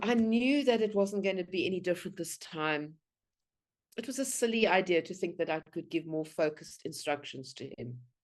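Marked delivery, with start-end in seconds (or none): none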